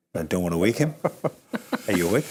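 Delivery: careful, soft, low, hushed voice. A host opens the live show, not wanting to wake the other host, talking softly. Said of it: "I'm talking softly".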